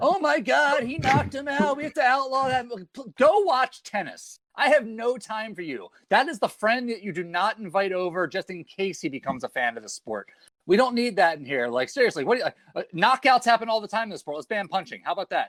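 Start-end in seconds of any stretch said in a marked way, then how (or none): 0.0-2.7 scandalized pearl-clutching cry, pitched-up. Mocking outraged critics of a knockout: mocking pearl-clutching screaming. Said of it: "pearl-clutching ninnies who are sitting here screaming like".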